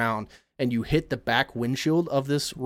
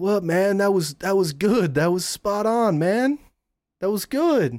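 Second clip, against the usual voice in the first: surfer dude voice, much higher pitch; 6 semitones higher than usual. Speaking as a Sunshine Surfer in a role-play: surfer dude voice. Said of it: "as a Sunshine Surfer, say".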